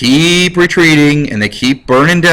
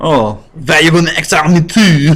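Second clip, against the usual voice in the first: put-on French accent. Retelling history, giving Napoleon's reply to his exile, in a French accent. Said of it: "my French accent is not as as slamming".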